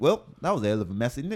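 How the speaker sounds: calm, unruffled put-on British accent. Retelling what the British driver said amid smoke everywhere, in a put-on British accent. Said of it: "Fucking British dude".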